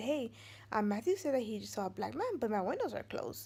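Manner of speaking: ordinary talk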